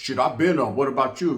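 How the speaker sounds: plain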